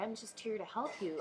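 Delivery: small, sugary-sweet little voice. Imitating a man who is not a nice guy, in a put-on little sweet voice. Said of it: "in a little sweet voice".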